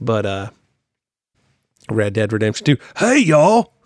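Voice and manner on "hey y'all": very high, loud voice. Imitating how the game character Arthur talks: imitating Arthur Morgan's voice. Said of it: "that's how Arthur talks".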